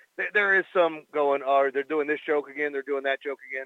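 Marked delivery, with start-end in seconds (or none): none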